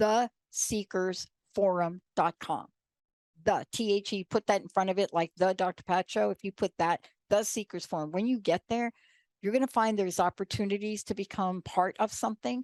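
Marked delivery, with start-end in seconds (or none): 0.0-2.7 said slowly at a deliberate pace. Giving listeners a website address: saying it slowly. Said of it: "I'll say it slowly".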